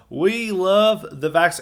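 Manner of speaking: exaggerated Southern accent, high. Quoting Ron DeSantis on the vaccine, Southern-accent impression. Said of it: "I'm giving him too much of a southern accent".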